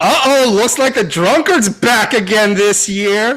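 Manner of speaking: loud, full-lungs, very high yell. In a role-play scene, as Lord Leos climbs the stairs, Garrus yelling from the crowd. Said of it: "Garrus yells from the crowd".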